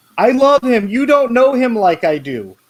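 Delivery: put-on very high teenage-girl voice, yelling. Comparing a friend defending NFTs to a teenage girl: imitating a girl yelling at daddy. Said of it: "the 16-year-old girl who's yelling at her daddy".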